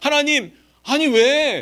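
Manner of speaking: high, loud, indignant complaining tone. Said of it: "이런 질문 많이 하잖아요".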